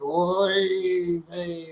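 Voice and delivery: mock zombie voice with a stretched oy.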